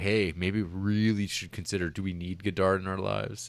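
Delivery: ordinary talk, nothing marked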